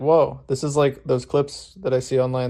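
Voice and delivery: ordinary talk, nothing marked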